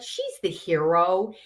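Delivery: ordinary talk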